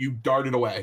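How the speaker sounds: ordinary talk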